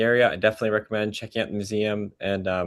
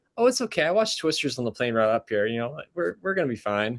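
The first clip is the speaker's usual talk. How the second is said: mock overly calm, unbothered, reassuring tone; 3 semitones higher than usual. Asked about tornado warnings during a storm drive, Jenny answers, imitating Jenny's overly calm voice. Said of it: "Jenny very very calmly says, a little too calmly".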